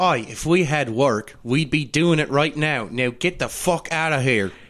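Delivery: put-on northern English dialect voice. Playing a character sending others away in a scene, in a northern accent. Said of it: "Fucking kudos, [name], on the northern accent".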